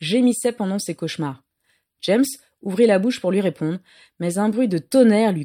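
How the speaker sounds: ordinary delivery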